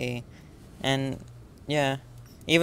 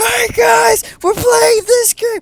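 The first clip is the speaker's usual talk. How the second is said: very loud, very high-pitched full-blast yell; 15 dB louder than usual. Imitating gaming YouTubers who shout: imitating a shouting gaming YouTuber. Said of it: "the ones that shout".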